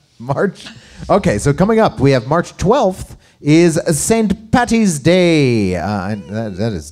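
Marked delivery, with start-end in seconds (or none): 2.0-5.8 poor put-on Irish accent, pitched up, "day" drawn out. Announcing an upcoming holiday on the calendar: bad irish accent. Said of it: "I did not do a good, uh, accent".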